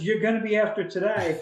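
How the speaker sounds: New Jersey way of talking. Retelling what a man said to him over beer, the speaker uses a new jersey accent. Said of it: "he said it in his New Jersey kind of way".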